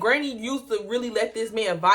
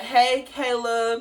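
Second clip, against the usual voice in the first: fake, put-on, overly friendly tone. Retelling how a housemate greeted the speaker: imitating a fake friendly greeting. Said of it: "he'd be fake ass".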